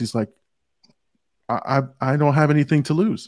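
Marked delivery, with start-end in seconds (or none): 1.5-3.3 put-on innocent childlike voice, quieter. Quoting his character's line from just before the scene: imitating a childlike voice. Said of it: "it's a very childlike voice".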